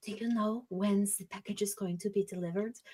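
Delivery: very quiet, hushed half-whisper. Describing two workers overheard talking to each other, acting out a half-whisper. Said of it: "you hear them whispering to each other".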